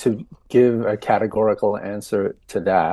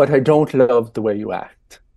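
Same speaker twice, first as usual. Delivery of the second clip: put-on Irish-accented speech; 3 dB louder than usual. Retelling what a woman said after saying I love you, in her Irish accent. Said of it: "I'm using her Irish accent when I say that".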